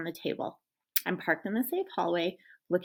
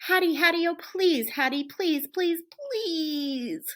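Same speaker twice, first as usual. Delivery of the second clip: high, whiny voice stretching each "please"; 9 semitones higher than usual. Reading a story aloud, a dog begging again: whining. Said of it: "I whine some more".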